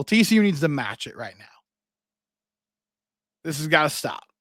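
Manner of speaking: exasperated, fed-up, frustrated, urging tone. Urging TCU to match SMU's fire right now: frustrated. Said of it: "you can sense the frustration in my voice".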